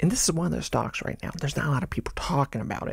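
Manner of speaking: hushed whisper under the breath. Investor talking about a stock few people are discussing yet, whispering. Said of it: "why I'm whispering".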